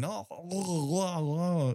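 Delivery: mock yell, high. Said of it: "he comes up yelling".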